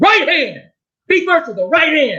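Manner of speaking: big, booming, very high ringside-style shout. Retelling a fight, a voice shouting from the corner: imitating Roy Jones Senior's booming shout. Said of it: "this big booming voice".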